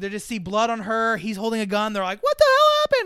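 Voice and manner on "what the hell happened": very high, loud alarmed yell.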